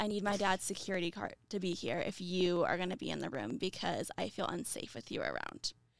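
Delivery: ordinary talk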